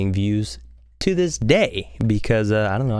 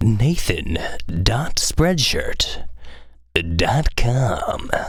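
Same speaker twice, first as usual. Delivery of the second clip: very slow, drawn-out put-on radio announcer voice. Promoting their merch website: radio voice. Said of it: "That's my radio voice".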